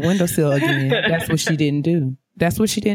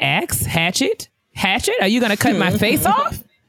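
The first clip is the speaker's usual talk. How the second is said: snarky, teasing voice, high and swooping; 5 semitones higher than usual. Retelling how mom Rhonda corrected "ask" as "axe": imitating mom Rhonda. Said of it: "She'd be like".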